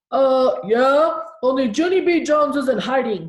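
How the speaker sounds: very loud, slow, drawn-out spooky voice. Junie b., hiding from the principal, calls out in a scary voice. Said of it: "I said in a scary voice".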